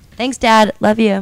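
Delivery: loud, high-pitched shouting.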